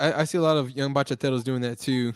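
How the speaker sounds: ordinary talk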